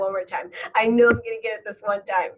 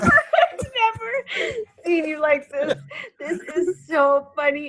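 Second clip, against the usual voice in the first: laughing so hard she's crying, higher; 7 semitones higher than usual. Watching the other speaker react to a burning challenge, laughing so hard she's crying. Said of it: "I really am crying".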